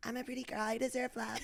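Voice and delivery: sweet voice with rasp. Imitating Sammy Sweetheart from a reality show: Sammy Sweetheart voice. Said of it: "she has a sweet voice with a little rasp".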